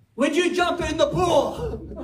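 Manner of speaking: high impatient exasperated tone. Describing a parent urging a child frozen at the pool edge: mock-frustrated impatient parent. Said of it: "the cheerful tone gives way to frustration".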